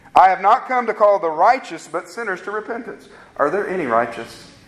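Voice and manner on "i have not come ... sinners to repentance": usual speaking voice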